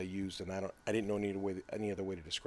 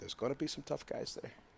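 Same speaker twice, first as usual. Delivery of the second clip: whispered, put-on Brazilian accent; 6 semitones higher, 4 dB quieter than usual. Talking about tough opponents at a tournament: Brazilian accent. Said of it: "in my best, uh, Brazilian acc-, accent".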